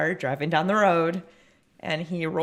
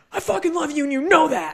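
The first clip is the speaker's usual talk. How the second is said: mock aggressive shout, pitched very high; 10 semitones higher, 4 dB louder than usual. Quoting how he said it to the speaker, retelling a yell. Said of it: "He yelled it at me".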